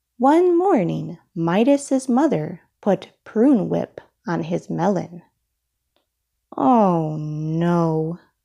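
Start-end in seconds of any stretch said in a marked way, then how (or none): 6.6-8.2 groaning, lower. Narrator reading a story, Midas reacting to prune whip on his melon: groaning. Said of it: "groaned Midas".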